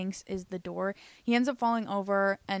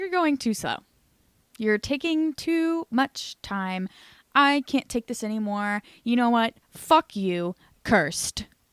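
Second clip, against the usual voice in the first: put-on angry ghost woman's voice, louder; 3 semitones higher, 5 dB louder than usual. Retelling what the ghost woman says in a dream: imitating an angry ghost woman. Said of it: "The ghost lady has gotten mad enough".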